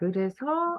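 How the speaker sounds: pitch lifts gently on final 서. Korean lesson demonstrating 그래서 intonation: slight rise on final 서. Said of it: "뒤에 서가 좀 올라가요. 위로".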